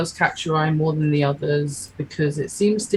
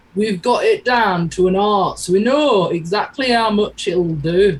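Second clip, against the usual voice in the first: put-on large, stout man character voice; 3 semitones higher, 4 dB louder than usual. Narrator voicing a potion seller a player asks about: large stout man voice.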